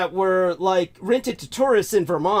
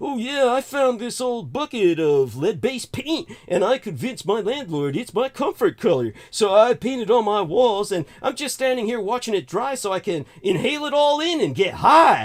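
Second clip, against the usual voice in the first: play-acted, mocking, dripping with sarcasm; 3 semitones higher than usual. Retelling a friend's answer, made up: sarcastic mock imitation. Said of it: "everything I'm saying in sarcasm and satire".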